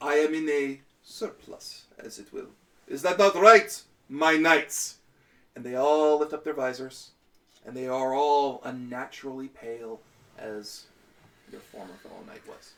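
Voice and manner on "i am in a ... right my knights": chuckling vampire voice, slower. A game master voices Strahd, just identified as a vampire, chuckling as Strahd. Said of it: "Strahd chuckles and says".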